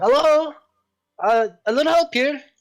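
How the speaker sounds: very high, loud cry out. A character dangling from a tree calls to adventurers approaching, calling out. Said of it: "this voice calling out to you".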